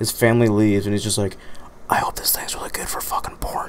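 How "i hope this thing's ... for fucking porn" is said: dramatic whisper, quieter. Retelling what a customer said while leaving, whispered for dramatic effect. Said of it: "I just whispered it for dramatic effect".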